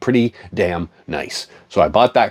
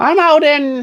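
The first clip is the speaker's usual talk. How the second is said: high, put-on old lady voice. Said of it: "she's like".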